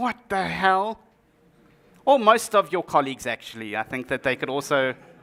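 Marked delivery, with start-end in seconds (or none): 0.0-1.0 put-on slow, drawn-out, baffled child voice. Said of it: "They look at you like".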